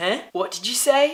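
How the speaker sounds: amateur put-on English accent. Retelling a man at a table of beers answering him, attempt at English accent. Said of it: "That was my attempt at an English accent".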